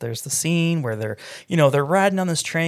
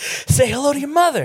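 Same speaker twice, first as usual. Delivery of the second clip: put-on voice with odd upward cadence, higher and louder; 12 semitones higher, 4 dB louder than usual. Retelling a movie scene where a teacher talks about bees: Mark Wahlberg impression, upward cadence. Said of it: "in that weird, like, upwards cadence that he does".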